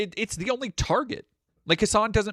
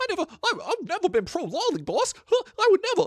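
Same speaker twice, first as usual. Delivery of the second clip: put-on whinging, cowering henchman voice, higher; 13 semitones higher than usual. Mocking someone who sounds cornered: whinging loser henchman voice. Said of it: "like a loser henchie in a, in a, like, action movie who's like".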